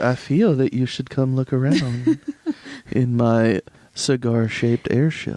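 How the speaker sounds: very seductive, come-hither coaxing tone. Retelling how he urged them aboard his airship, the speaker goes mock-seductive. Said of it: "he's doing it very seductively".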